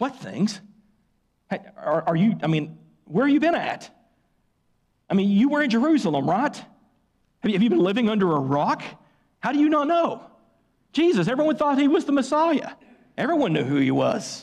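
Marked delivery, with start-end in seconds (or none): 0.0-12.7 play-acted, fed-up, exasperated tone. Retelling Cleopas answering Jesus, acting out exasperation. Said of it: "you can almost hear the exasperation in Cleopas' voice".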